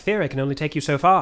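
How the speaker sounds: put-on British accent. Quoting a movie character's line about theory: British accent. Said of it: "I don't know why I'm giving him a British accent".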